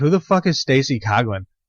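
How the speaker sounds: ordinary delivery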